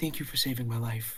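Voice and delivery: very quiet, hushed half-whisper. Narrating a character who runs up and hugs the listener, half-whispering. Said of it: "he whispers".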